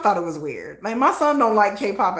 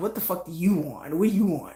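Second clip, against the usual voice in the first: put-on rude dismissive tone, lower and quieter; 3 semitones lower, 5 dB quieter than usual.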